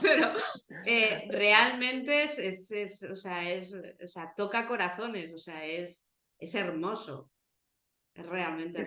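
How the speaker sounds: voice fighting and holding back tears. Speaker telling another person about something that moves her, holding back tears. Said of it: "estoy llorando porque me estoy aguantando".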